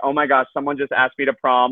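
mock-giddy squeal of excitement. Retelling her reaction after hanging up the phone, imitating giddy excitement. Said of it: "so giddy".

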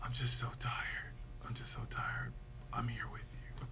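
low, soft dying whisper.

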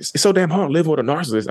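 heated, very high-pitched shout. Retelling what she yelled at the speaker mid-argument: retelling her yell. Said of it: "she's yelling at me".

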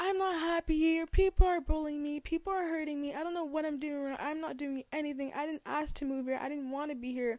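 put-on, high-pitched yelling outburst. Retelling what was said to a teacher in front of the class: imitating own past yelling. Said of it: "yelling and saying".

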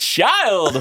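lively, fun delivery. Asked to say the word in a fun way after a sad one; fun, playful delivery. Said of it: "Now do a fun one".

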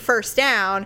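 ordinary talk

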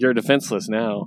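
normal talking voice

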